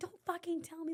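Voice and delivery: mock high, angry, aggressive snapping. Telling a story about a bar confrontation, quoting the girl: retelling her angry snapping. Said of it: "like popping off".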